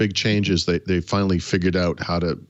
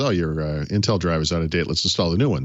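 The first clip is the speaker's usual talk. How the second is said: ordinary delivery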